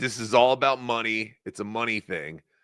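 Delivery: ordinary delivery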